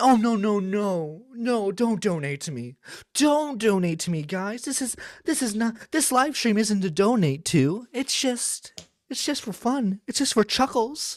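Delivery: mock false modesty. A streamer mocks another streamer refusing donations: mocking fake-humble imitation. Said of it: "Don't don't try to fucking like humble yourself".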